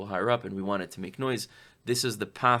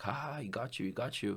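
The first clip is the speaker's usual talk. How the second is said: put-on slow, jeering, gloating laughter; 9 dB quieter than usual. Retelling a guard who laughs at the teller: imitating someone laughing mockingly. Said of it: "starts laughing".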